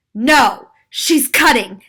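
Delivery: loud shout. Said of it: "she yelled".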